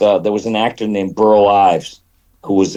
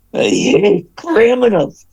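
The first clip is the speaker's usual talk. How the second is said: intense, very high-pitched, swooping delivery; 13 semitones higher than usual. Describing actors behind a cartoon voice: intense Kirk Douglas voice. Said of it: "Kirk Douglas, who was so intense".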